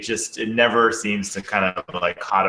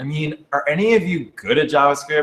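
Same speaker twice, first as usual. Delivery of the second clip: earnest, feeling-laden, emotional tone, pitched up; 8 semitones higher, 3 dB louder than usual. Reading a viewer's written question aloud: imitating Katie's emotional question. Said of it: "try to do my best impersonation".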